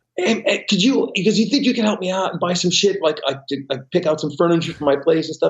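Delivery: pretty high-pitched voice. Retelling how his friend asked for help furnishing his place, imitating a high-pitched voice. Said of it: "he's got a pretty high voice".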